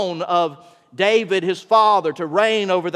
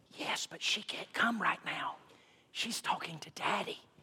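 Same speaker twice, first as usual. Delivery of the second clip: put-on hushed, whispered little-boy voice; 18 dB quieter than usual. Telling a joke, a little boy answers a telemarketer's call, hushed whispered little-boy voice. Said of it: "whispered voice of a little boy".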